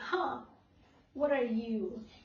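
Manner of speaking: put-on spoiled brat voice, condescending and insecure. Retelling a book character meeting the king: imitating someone bratty. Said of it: "insecure and, like, bratty".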